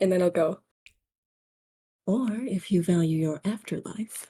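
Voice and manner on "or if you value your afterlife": whispering. Sneaking up behind him in character, leaning in: whispering in his ear. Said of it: "I'll kind of whisper in his ear".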